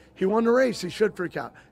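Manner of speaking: plain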